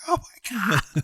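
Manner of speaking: acted freaked-out, panicked outburst, very high pitch. Retelling a cartoon scene where an abducted farmer panics: imitating someone freaking out. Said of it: "He starts freaking out".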